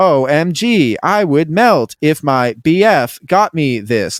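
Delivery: slow synthetic female robot voice.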